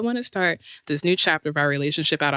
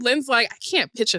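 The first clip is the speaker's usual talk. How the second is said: ordinary talk, nothing marked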